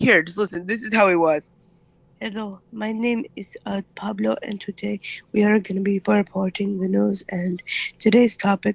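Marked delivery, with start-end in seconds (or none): 2.2-8.8 put-on super quiet, barely-there Indian accent voice. Showing listeners how someone reporting the news spoke, in a super quiet Indian voice. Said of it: "his voice is like this super, um, quiet Indian voice".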